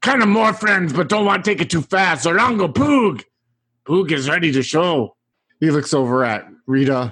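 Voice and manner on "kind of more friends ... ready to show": put-on goblin voice, higher. Voicing a goblin in the game, answering a long-nosed lady: Poog goblin voice. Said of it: "he looks up at her and he's like".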